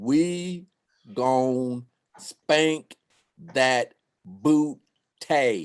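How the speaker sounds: very slow, deliberate, halting, word-by-word, spelled-out delivery. Repeating a prediction to a doubting listener: said a little slower. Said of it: "I'ma say it a little slower for you".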